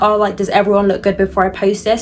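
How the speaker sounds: ordinary delivery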